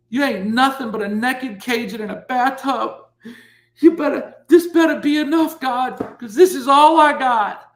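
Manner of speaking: acted, very high, loud, weeping, desperate. Retelling what they said to themselves and God at their lowest point, retelling crying. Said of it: "And I'm crying".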